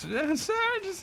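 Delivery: voice breaking, cracking very high. Acting out addressing the man at the table as 'sir', voice cracking. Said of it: "your voice cracks".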